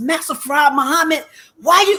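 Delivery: shrill, full-lung scream, as loud as possible. Retelling learning she flunked the test, imitating her own scream. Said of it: "I'm screaming at the top of my lungs".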